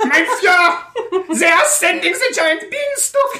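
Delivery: very high, slow, laughing bad German accent.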